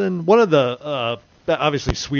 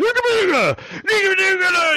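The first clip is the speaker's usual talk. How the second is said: angry, annoyed, put-on mock-Swedish chef gibberish voice. Retelling the cook snapping at a host ordering a hamburger: angry Swedish Chef voice. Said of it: "He gets all pissed at her".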